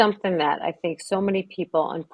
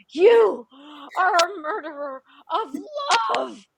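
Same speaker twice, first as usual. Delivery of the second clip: put-on very high, drawn-out, angsty teenage screaming; 12 semitones higher than usual. Retelling a movie scene where a teenage daughter lies on the ground screaming: imitating a screaming teen. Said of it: "just screaming".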